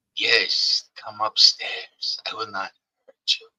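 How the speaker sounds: hoarse, rasping whisper. Narrating a scene, the speaker voices an unseen answer to the player's question: raspy voice. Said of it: "In a raspy voice".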